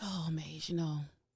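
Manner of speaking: worn-out, tired, weary voice. Answering the host's question about how they feel this morning: tired voice. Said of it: "this is my tired voice".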